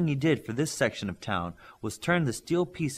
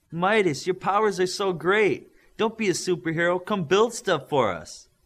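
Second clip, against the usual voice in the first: high-pitched sarcastic, mocking tone; 6 semitones higher, 4 dB louder than usual. Narrator reading Olympian speaking to Midas, in a high-pitched sarcastic voice. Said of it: "Olympian said in a high-pitched, sarcastic voice".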